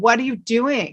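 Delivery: mock, exasperated, disbelieving screaming cry. Recounting yelling at a painting instruction video, retelling own screaming. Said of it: "I'm screaming at the video going".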